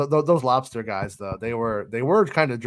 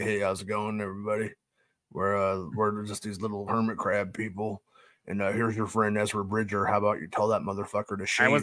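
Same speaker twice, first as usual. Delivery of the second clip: very deep voice, sunk way down low; 5 dB quieter than usual. Imagining a hermit crab character speaking with a real deep Deep Roy voice. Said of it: "real deep".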